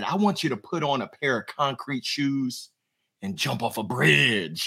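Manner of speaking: real quiet, hushed, low-key delivery. Retelling what a man on a cold call said: imitating someone speaking real quiet. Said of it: "He got real quiet".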